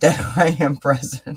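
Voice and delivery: speaking through laughter. Talking about being grateful while a cat distracts: laughing while talking. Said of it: "I'm laughing at the cat".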